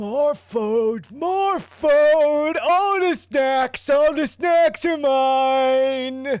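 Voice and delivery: very high, slow, lumbering ogre voice, "mine" drawn out. Voicing a lumbering ogre that smiles and moves toward the players: lumbering ogre voice. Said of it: "and the ogre turns to you".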